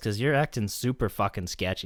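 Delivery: ordinary delivery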